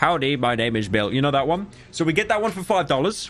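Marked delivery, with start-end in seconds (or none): 0.0-1.1 lower, put-on text-to-speech voice. Speaker explaining TTS prices to the audience, doing the Brian TTS voice. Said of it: "the one that goes like".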